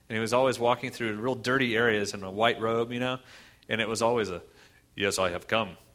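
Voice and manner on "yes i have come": low, dead-flat, level monotone drone. Describing how Jesus sounds in old videos, speaker mimics him in a monotone voice. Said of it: "in a very monotone voice".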